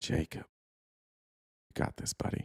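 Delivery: slow, whispered, drawn-out, encouraging tone. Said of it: "Do you want me to say it slowly?".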